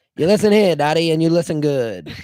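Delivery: put-on old-fashioned tough-talk voice. Acting out a 1920s version of a detention scene, old-timey 1920s voice. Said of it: "they talk in the old-timey voice".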